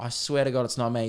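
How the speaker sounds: ordinary talk, nothing marked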